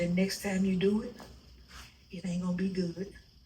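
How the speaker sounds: close, hushed, secret half-whisper. Retelling what the pastor said during service: imitating a half-whisper. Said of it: "He whispered in my ear".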